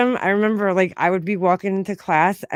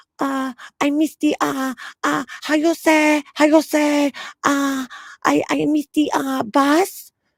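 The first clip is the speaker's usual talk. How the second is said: halting put-on broken English, high and slow; 8 semitones higher than usual. Speaker retells a classmate faking broken English to the teacher: mock fake broken English.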